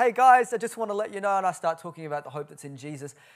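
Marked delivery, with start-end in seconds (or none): 0.0-1.4 very loud, high voice projected like calling out. Retelling calling out to a Friday-night crowd at Town Hall, retelling a raised voice. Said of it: "I start lifting my voice".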